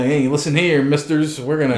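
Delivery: ordinary talk, nothing marked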